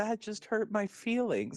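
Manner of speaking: put-on very high, hurt, crestfallen, sulking voice. Retelling how Skull reacts when turned down: imitating sad Skull. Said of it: "Skull's just sad".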